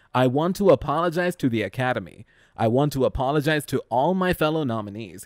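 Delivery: ordinary talk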